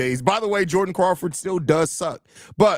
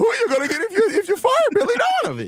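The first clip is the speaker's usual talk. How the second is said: put-on annoying, whiny fan voice, pitched higher. Repeating the fans' question when asked about the voice: weird annoying fan voice. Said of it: "I just give them the weirdest voice".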